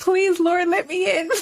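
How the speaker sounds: put-on high, frantic, desperate pleading cry. Retelling how the brother pleaded while banging on the church door: imitating a frantic plea. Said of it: "banging on the door".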